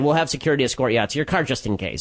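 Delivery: ordinary talk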